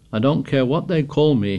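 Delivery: ordinary delivery, nothing marked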